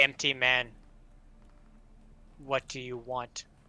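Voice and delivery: loud, booming voice. Voicing a mirror that speaks without warning, booming mirror voice. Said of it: "a booming voice kind of comes out".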